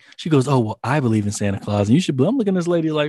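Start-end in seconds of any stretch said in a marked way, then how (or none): 0.5-2.3 imitated offended tone. Retelling what the lady at the counter said: imitating an offended tone. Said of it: "she got so offended".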